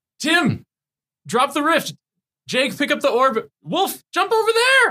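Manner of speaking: very high, slow, drawn-out shouting. Asked for a demo, the speaker calls out to teammates, yelling game callouts. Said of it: "Yell of course".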